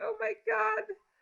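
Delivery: mock panic-stricken, sudden panicked exclamation. Retelling the moment the slides failed before an interview: retelling own panic. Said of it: "So panic mode".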